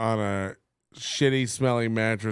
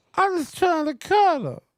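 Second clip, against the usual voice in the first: very high-pitched comedian's voice; 4 dB louder than usual. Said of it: "you gotta do it in Diaz Mackey's voice".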